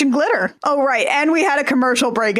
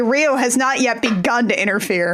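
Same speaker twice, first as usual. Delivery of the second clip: ordinary delivery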